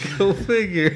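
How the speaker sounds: mocking character voice, laughing.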